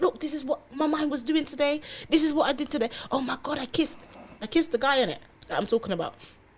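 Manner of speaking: acted-out panic. Retelling confessing a kiss to a partner, acting out past panic. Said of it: "I'm panicking".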